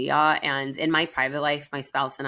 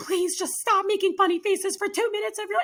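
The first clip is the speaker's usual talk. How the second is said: play-acted, very high-pitched, scolding screaming. Retelling a video of a wife screaming at her husband: imitating a wife screaming at her husband. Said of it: "screaming at her husband".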